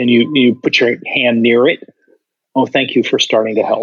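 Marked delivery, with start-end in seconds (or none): 2.5-3.8 soft gentle voice, faster. Demonstrating a low-emotion response to a child, [name]: soft gentle voice. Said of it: "you hear the softness in the voice".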